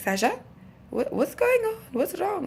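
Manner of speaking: attempted Italian accent, very high and swooping. Quoting an italian woman asking sasha what's wrong, attempted italian accent. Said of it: "I can't do Italian accent, right? I'm trying".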